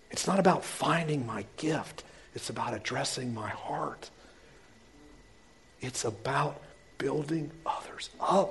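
soft and quiet. Preaching to a church, the speaker goes soft and quiet. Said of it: "I'm getting soft".

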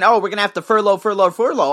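ordinary talk, nothing marked

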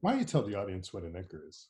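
classic, swooping, put-on radio host announcer delivery. Repeating own earlier question: put-on radio personality voice. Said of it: "that's my radio personality thing".

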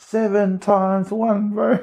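very slow, very high, drawn-out yell. Retelling calling out a times-tables question in class: imitating own yell. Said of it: "I just yelled out".

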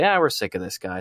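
ordinary talk, nothing marked

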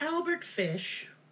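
sweet storybook voice. Host repeats a name from the case, in a pleasant voice. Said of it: "I thought if I said it in a more pleasant voice".

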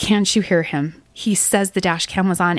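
ordinary delivery

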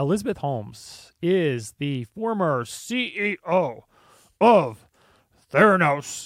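every word drawn out slowly. Introducing a former company head in her voice: deep Elizabeth Holmes voice. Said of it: "she kinda talks like that too".

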